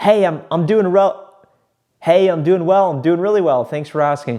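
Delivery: lively, excited, fast, bouncing up-and-down salesman delivery. A speaker demonstrates a phone call greeting with excited, up-and-down inflection. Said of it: "I use inflection up and down to sound excited".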